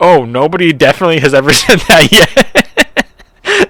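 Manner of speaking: put-on drawn-out, swooping, sing-song sarcasm. Retelling the poll worker's second reply: imitating a sarcastic reply. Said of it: "Meaning, like, I'm the only idiot".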